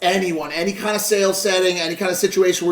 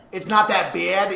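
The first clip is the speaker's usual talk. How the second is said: mocking imitation of a New York accent. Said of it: "Make fun of their accent".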